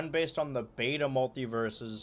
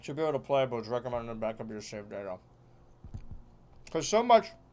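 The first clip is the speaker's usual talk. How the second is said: speaking with mouth full of food; 2 semitones lower than usual. Speaker still eating French toast while talking, talking with mouth full. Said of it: "I'm still eating French toast".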